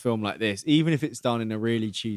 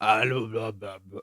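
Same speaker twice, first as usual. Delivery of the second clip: low, growled, weird demon babble. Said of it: "that weird voice again".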